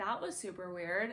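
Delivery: plain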